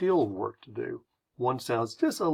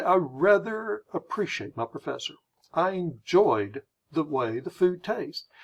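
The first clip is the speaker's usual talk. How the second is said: slow, drawn-out delivery in a British accent; 4 semitones higher than usual. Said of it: "they are slowing down".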